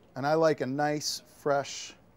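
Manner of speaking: ordinary delivery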